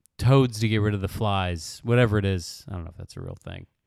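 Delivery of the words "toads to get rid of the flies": normal talking voice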